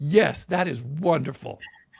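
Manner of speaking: slow, measured, carefully spelled-out deliberate delivery. Retelling what they said aloud about two women in an elevator, in a very loud voice. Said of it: "I said in a very loud voice".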